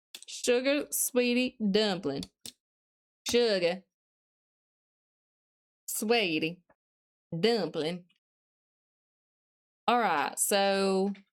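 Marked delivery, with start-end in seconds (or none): 0.3-8.1 put-on Southern US accent. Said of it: "I'm trying to use Southern, Southern terminology".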